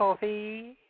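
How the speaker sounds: "coffee" drawn out long, pitched very high. Giving an example of how a man talks; stretching out the word coffee. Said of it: "stretch out that last word".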